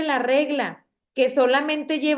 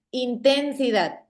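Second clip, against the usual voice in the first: heavy stress on syllable ten of intensidad. Spanish lesson on stressed syllables, showing a misplaced stress: stress on ten. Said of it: "la pronuncio dándole mayor énfasis a la sílaba ten".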